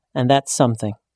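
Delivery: ordinary delivery, nothing marked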